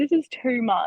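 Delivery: put-on words through real crying, soft and slow. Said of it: "to, like, actually crying".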